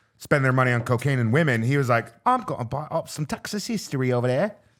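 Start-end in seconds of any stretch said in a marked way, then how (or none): 2.3-4.5 put-on English accent. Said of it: "I can't do that accent".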